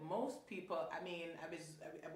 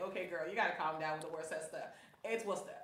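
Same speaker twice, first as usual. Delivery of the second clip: plain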